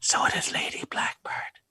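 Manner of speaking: hushed, breathy whisper, said aside. Answering the captain in character with a quiet aside: whispering. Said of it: "And I go whisper".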